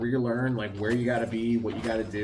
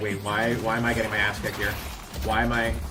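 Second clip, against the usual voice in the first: plain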